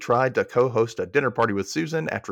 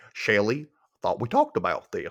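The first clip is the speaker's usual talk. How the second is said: put-on goofy cartoon dad voice, swooping pitch; 3 semitones lower than usual. Joking with the co-host by calling her name: Goofy voice. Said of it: "I was trying to sound like Goofy".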